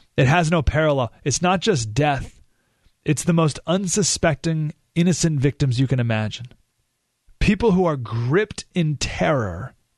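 ordinary delivery

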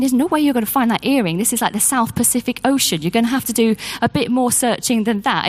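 usual speaking voice

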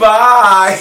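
camp, effeminate delivery. Retelling a kid saying goodbye from the window: imitating an effeminate goodbye.

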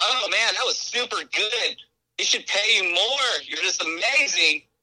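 put-on condescending fawning. Acting out trash talk to a player after each shot: mock patronizing praise. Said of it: "patronize him in that way".

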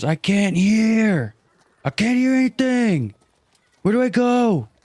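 very high, deliberate, drawn-out yell. Retelling running up to Keely during a game, the speaker is retelling a yell. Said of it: "Stop yelling in my face".

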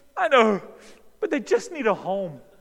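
put-on tearful wail, very high and loud. Retelling his dad watching a sad pet commercial: imitating his dad crying. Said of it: "my dad is crying over the orphaned dogs".

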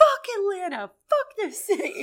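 very high-pitched screaming, stretched out long. Telling a story about a stranger at the gym, imitating her screaming. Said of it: "she just kept screaming".

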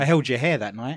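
ordinary talk

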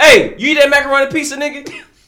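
shouting. Repeating a question to another speaker: yelling. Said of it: "Why you yelling?".

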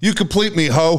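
high, blurted yell. Recounting how a man yelled out to his wife, retelling a yell. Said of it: "He yells out".

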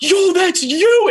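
play-acted, very high, shrieking, screaming outburst. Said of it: "And starts, like, screaming".

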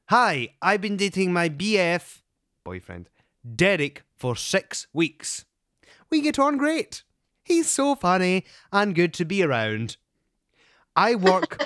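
loud, prim nanny voice with big pitch swoops. Podcast host reads a listener's email aloud, sounding like Mary Poppins. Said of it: "You sound like Mary Poppins".

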